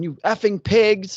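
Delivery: high-pitched, hollered-out yell. Retelling a woman yelling at two men standing in front of her, imitating someone yelling. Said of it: "she's yelling".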